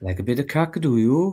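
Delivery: Welsh-accented speech. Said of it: "How do you say it?".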